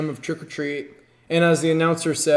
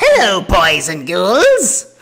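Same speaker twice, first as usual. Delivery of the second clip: loud, swooping little ghoul voice; 4 semitones higher, 8 dB louder than usual. Fan recalling her favorite panel guest, who played the Crypt Keeper, doing the Crypt Keeper voice. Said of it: "I love the little voice".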